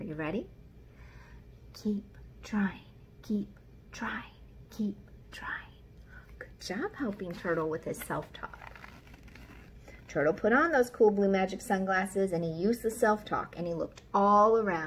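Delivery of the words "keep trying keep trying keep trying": quiet, soft, breathy whisper. Leading listeners in repeating self-talk three times together, in a quiet voice. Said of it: "Let's say it together 3 times in a quiet voice".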